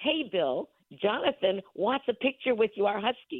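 acted, called-out yell projected far off. Retelling calling out to a man for a photo with the dog, retelling a yell. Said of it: "I turned around and I yelled out".

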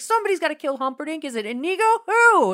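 put-on, very high, loud, agitated, worked-up kid voice. Retelling the grandson demanding who kills Humperdinck: imitating a kid getting worked up. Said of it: "he's just getting all worked up".

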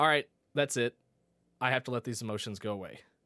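ordinary talk

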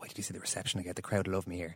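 put-on whisper. Retelling what a player whispered before his substitution: imitating Brian O'Driscoll whispering. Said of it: "he whispers, he goes".

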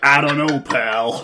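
badly done put-on American accent. Describing a game scene, the speaker voices the American player's reply: American accent. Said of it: "I'm being slandered here for my American accent".

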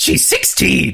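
high, creaky, rough, squeezed-out cartoon scientist voice. Recall a favorite moment of a character you call the best father, as a Dr. Doofenshmirtz impression. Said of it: "Now that was a good impression".

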